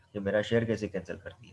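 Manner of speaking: normal talking voice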